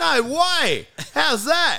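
put-on broad Australian accent, very high, swooping, very slow. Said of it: "you revert into your super accent".

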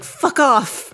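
put-on Scottish accent, pitched high. Retelling what a ghost says on a podcast recording: imitating a scottish accent. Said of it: "the ghost has a Scottish accent".

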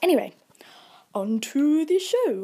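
put-on stupid voice, high and drawn out. Announcing the start of the show: stupid voice. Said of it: "I had to do that in a stupid voice".

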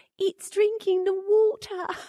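very high, boyish voice, bad Australian accent. Describing accents heard while traveling, imitating an Australian 7-year-old boy. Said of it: "hear a 7-year-old boy be like".

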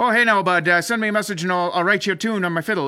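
deliberately bad East Coast accent. Imitating a fiddler's social media offer in a terrible East Coast accent. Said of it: "I'm just gonna be a terrible East Coast accent".

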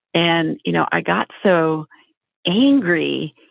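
ordinary delivery

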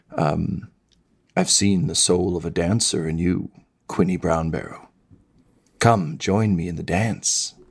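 intimate, secretive, coaxing, confiding tone. Storyteller voicing a dancing figure who invites the listener's character to dance, slightly hushed tones. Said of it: "you hear them speak just kind of like in slightly hushed tones".

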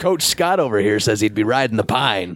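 put-on small-town Texas accent. Discussing whether a player gets benched, the speaker relays Coach Scott's view in a Texas accent. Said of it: "Why did you do that with the Texas accent?".

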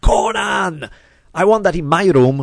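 high, loud, excited scream.

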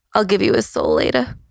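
hushed whisper. Voicing a woman as she hands over the weapons, whispering. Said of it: "and then she whispers".

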